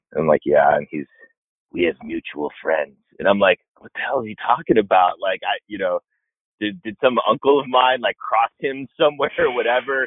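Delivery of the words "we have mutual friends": put-on gruff older-man voice, lower pitch. Retelling how Eddie came up to you and spoke, imitating Eddie's gruff voice. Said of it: "Eddie's like very much talks like this".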